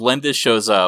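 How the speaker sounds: ordinary talk, nothing marked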